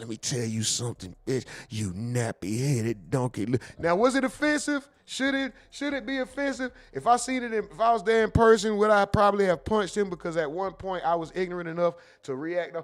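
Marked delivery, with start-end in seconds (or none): 0.0-3.5 insulting voice, leaning right into the mic. Retelling an insult a man said up close to the mic: imitating a close-to-mic voice. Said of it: "he got close to the mic, his voice".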